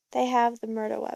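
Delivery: plain reading voice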